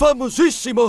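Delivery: plain reading voice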